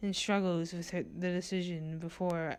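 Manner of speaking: ordinary delivery, nothing marked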